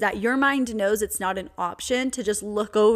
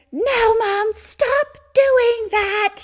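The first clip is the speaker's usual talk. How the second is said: put-on very high, very slow screaming toddler voice; 13 semitones higher, 7 dB louder than usual. Retelling how her three-year-old reacts to a hug: imitating a screaming toddler.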